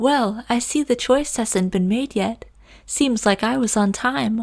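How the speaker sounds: put-on young woman's voice. Reading a new character's line aloud, in a young woman voice. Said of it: "young woman voice".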